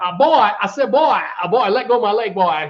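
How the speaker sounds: cartoon rooster voice. Naming a voice actor's cartoon roles, the speaker breaks into a Foghorn Leghorn voice. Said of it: "Foghorn Leghorn".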